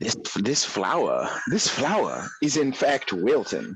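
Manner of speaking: put-on old Southern man voice. Complaining about sweating in summer, talking like an old southern general. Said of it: "talking like an old Southern general".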